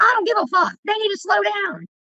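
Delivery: play-acted very high, swinging, swooping angry rant. Retelling the dad cussing out speeding bus drivers: imitating dad yelling at bus drivers. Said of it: "My damn dad yelling at the bus drivers".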